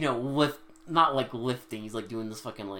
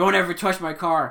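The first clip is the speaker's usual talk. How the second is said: very loud, high, all-out yell; 8 semitones higher, 9 dB louder than usual. Retelling how Papa Doc yells at one of the kids about his car: retelling Papa Doc's yell. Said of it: "Papa Doc yells at one of the kids".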